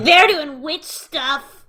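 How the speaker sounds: very loud shouting. Voicing a character speaking as two others step away: very loud. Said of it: "Matilda says very loudly".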